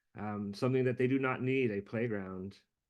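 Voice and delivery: ordinary talk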